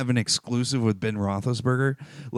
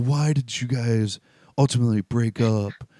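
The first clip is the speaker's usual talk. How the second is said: put-on really soft voice. Retelling an interviewer's question about a broken relationship, imitating a really soft tone. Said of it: "In like a really soft tone voice".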